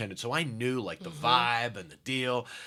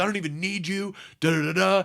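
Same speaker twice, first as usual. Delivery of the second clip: put-on yell, higher and louder; 7 semitones higher, 5 dB louder than usual. Retelling the manager at full volume over the comic: imitating the manager yelling. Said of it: "The manager's yelling at me".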